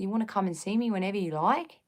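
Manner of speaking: soft, overdone put-on Australian accent. Imitating the woman who helped her, in a put-on Australian-sounding accent. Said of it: "Or was that too Australian?".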